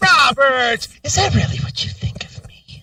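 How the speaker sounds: big, high opening sinking into a whisper. Mocking how someone responds when insulted, the speaker starts high and ends whispering. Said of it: "starts high and ends up with the whisper".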